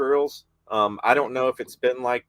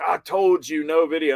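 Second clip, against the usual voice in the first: mock annoyed, fed-up, irritated man's voice; 4 semitones higher than usual. Retelling what a stranger said to the speaker: imitating an angry man. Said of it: "I guess he was getting pissed".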